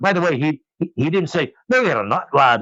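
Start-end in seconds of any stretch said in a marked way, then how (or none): 1.7-2.6 put-on Scottish accent. Retelling what a friend said on the phone, in Scotty's Scottish accent. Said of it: "he actually didn't speak like that".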